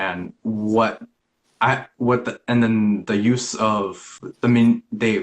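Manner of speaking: stuttering. Recalling past abuse, the speaker stutters at the recollection. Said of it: "I'm stuttering at the recollection".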